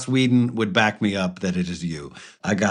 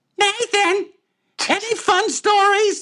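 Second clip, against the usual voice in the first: very high, very slow put-on drawl. Showing how a person named Trissa talks: Trissa impression. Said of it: "I'm gonna do a total Trissa".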